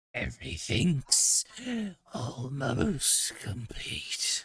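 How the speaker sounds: dragon-like, draconic monster creature voice. Voicing a creature getting back to its feet: draconic voice. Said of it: "that draconic voice".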